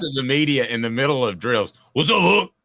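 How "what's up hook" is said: put-on raspy Cajun accent, higher and louder. Imitating a coach yelling to the media during drills: Ed Orgeron voice. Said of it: "like Ed Orgeron".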